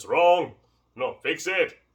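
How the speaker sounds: put-on strong, heavy, thick Jamaican accent. Recalling Sifu Carl correcting him at the wooden dummy, imitating Sifu Carl's Jamaican accent. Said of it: "He had a thick Jamaican accent".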